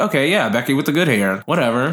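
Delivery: ordinary delivery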